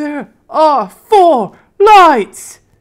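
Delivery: anguished, drawn-out shrieking howl, very high and loud. Retelling a torture scene from a show: Captain Picard tortured yell. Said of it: "he yells out ... all tortured and horrified".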